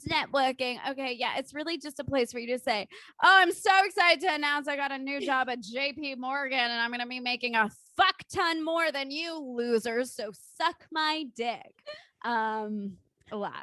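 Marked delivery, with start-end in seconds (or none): 3.2-11.8 mocking, parodied boastful bragging tone. Roasting LinkedIn by acting out a typical post: mocking a boastful LinkedIn poster. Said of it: "We better roast it".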